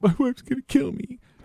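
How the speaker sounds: put-on very high, tearful sobbing and blubbering voice. Retelling what a sobbing man said after being arrested, imitating a man sobbing. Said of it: "this guy's just sitting there sobbing".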